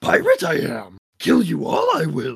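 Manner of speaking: put-on loud, swooping, Italian-accented wise old creature voice. Doing a pirate character's voice, an Italian Yoda voice. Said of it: "If Yoda was Italian".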